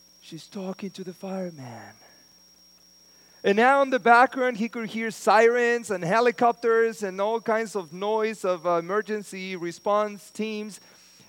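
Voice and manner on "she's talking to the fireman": hushed, very quiet, barely-there whisper. Telling a story about a phone call, imitating a whisper. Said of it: "the voice in a whisper said".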